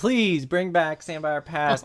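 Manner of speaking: mock, put-on pleading and begging voice. Reading out listeners' emails about the show, mock begging. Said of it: "begging, like".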